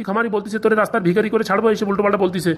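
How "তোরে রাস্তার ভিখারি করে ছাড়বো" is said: ordinary talk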